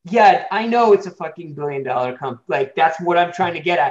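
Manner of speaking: snide, dismissive, cutting sarcastic tone. Retelling how the people in a pitch meeting talked back: imitating a sarcastic attitude. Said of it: "that kind of attitude of".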